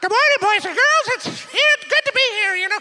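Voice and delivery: squeaky, very high, loud ventriloquist-puppet voice. Recalling being the little guy at school, speaker does a ventriloquist dummy voice. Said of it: "like Victor and his ventriloquist dummy".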